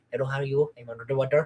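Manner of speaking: quick Indian accent. Explaining the voice chosen for a younger character: faster indian accent. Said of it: "a different kind, which is like a little bit faster".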